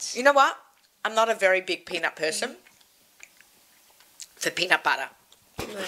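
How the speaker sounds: mouth full, chewing while talking. Host on air eating a peanut treat, talking with mouth full. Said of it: "I've got to finish what's in my mouth".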